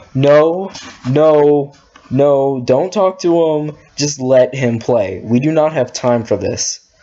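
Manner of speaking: ordinary talk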